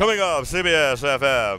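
on-air FM radio DJ announcer delivery. Talking about setting up speakers and a turntable, pretending to be a radio dj. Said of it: "pretend that I'm a radio DJ".

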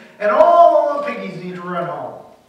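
very loud, sarcastic delivery. A teacher told colleagues avoid his jokes replies: sarcastic. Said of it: "he responded sarcastically".

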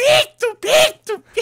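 piercing, shrill, very loud high yelling. Retelling how a teased woman kept yelling, retelling a woman's shouting. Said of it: "gritando que não é doente".

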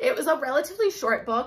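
voice cracking, breaking, giving out mid-sentence. Reviewing a historical fiction book, apologizing for it: voice cracking. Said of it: "my voice is cracking".

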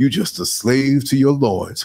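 put-on mutter under the breath. Retelling a teacher's remark to a late student, muttering under breath. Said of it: "under her breath, but loud enough".

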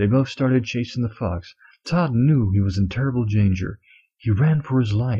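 ordinary delivery

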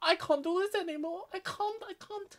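mock very high, loud, wailing sobbing cry. Voicing the crying tragic clown in the game: imitating a crying clown. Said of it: "I don't know why I'm speaking like that".

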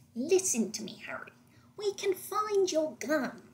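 wormy character voice, a touch high. Showing how they voice a character, the speaker shifts into the Everart voice. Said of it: "I just shift into the Everart voice".

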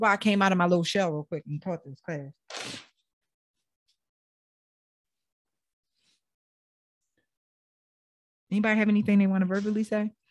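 speaking through tears, crying. Teaching a class and asking for input, crying while talking. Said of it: "I'm talking and I'm crying".

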